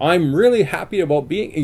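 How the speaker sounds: lively, jaunty, bouncing intonation. Explaining inflection as a responsiveness cue, demonstrating jaunty, bouncy inflection. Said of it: "jaunty, bounty".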